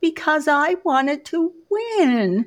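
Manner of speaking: put-on tiny, high-pitched little-kid voice with stretched word. Retelling answering her mother after shoving other children, in her tiny elementary school voice. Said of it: "I said in my tiny elementary school voice".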